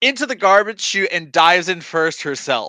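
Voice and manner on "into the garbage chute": mock high-pitched hollered rallying cry.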